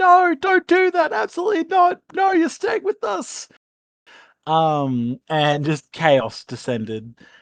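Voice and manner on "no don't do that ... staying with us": mock screaming, very high-pitched and shrill. Retelling a player who realized their mic was muted: imitating Jazz screaming. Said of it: "started screaming".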